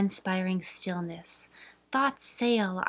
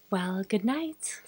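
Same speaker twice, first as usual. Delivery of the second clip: ordinary delivery, nothing marked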